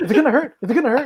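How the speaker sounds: freaked-out, nervous, panicky, high-pitched voice. Retelling their reaction while a man cleaned their thumb, imitating own freaking out. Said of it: "I was like freaking out".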